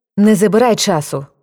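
increasingly annoyed, irritated, agitated. Yaroslava, pressed by Vovik to tell him something: getting irritated. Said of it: "почала нервуватися Ярослава".

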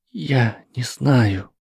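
shaky, trembling, quavering voice. A young witch answers the friend who has just praised her: trembling voice. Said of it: "ответила она дрожащим голосом".

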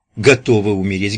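ordinary talk

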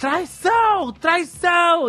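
put-on very high, shrill shouted yell. Recalling a late-night recording for a dramatization, retelling a shout of betrayal. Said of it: "tinha que ter uma parte que tinha um grito".

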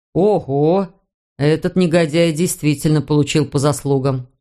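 ordinary talk

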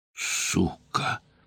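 quiet and muffled. Someone in an armed standoff swears; quiet and muffled. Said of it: "Это прозвучало тихо и глухо".

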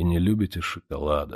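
plain reading voice

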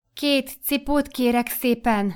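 unsure, hesitant, uncertain, slightly high-pitched voice. Feeling everyone watching, the narrator asks the shop clerk uncertainly. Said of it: "mikor kimondtam bizonytalanul".

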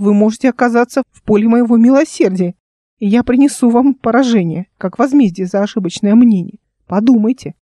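ordinary delivery, nothing marked

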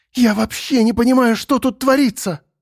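very high, furious half-whisper. Narrating a character who glances at a half-open door, speaking in an angry half-whisper. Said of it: "перешла на злой шепот".

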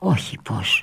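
fearful, frightened tone. Julia answers Eugenia's question about the man's crying, asking fearfully. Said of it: "Ρώτησε με φόβο η Ιουλία".

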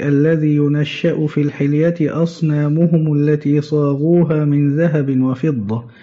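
normal talking voice

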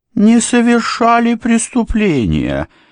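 very high, swooping, sneering, mocking tone. Narrator reads a servant throwing an aristocrat's words back at him, in a mocking tone. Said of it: "издевательским тоном произнес слуга".

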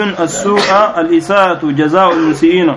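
ordinary delivery

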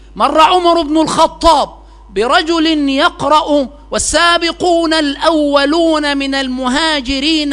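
ordinary talk, nothing marked

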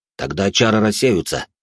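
ordinary delivery

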